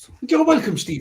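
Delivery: terrible put-on Irish accent. Replying to a thank-you during a game bit, terrible irish accent. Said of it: "That's a terrible Irish accent".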